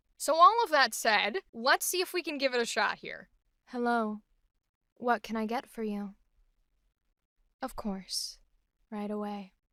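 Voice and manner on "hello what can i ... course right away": low, soft, steady, gentle, grounded voice. Giving a new character voice a shot: low, soft, grounded character voice. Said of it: "a little bit lower in my voice range, still a little soft".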